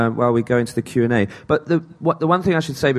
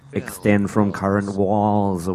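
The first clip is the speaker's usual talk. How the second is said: text-to-speech voice impression, much lower; 4 semitones lower than usual. Explaining on-screen game instructions to an audience: Microsoft Mike impression. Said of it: "That's my impression of Microsoft Mike".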